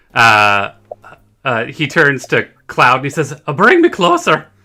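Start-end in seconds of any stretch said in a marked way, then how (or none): 3.6-4.4 put-on very high voice drifting into Irish accent. Storyteller voicing a character's request during the game, slipping into an Irish accent. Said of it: "I'm slipping into like Irish there".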